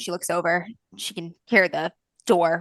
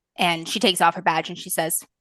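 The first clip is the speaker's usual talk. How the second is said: usual speaking voice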